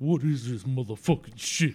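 loud, booming put-on actor voice. Doing an impression for the co-host on request: Ving Rhames impression. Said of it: "that's my Ving Rhames impression".

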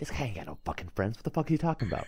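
super quiet, hushed under-the-breath aside. Voicing a character leaning over to another, speaking super quietly. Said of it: "super quietly, he's like".

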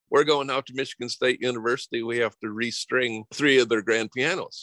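put-on heavy, laid-on thick Southern accent. Speaker retells what a man told him, in a thick Southern accent. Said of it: "he had a really thick Southern accent".

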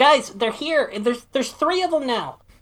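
very high, rising, loud shout. Calling down the basement door to the others: yelling a warning. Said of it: "I just yell down the".

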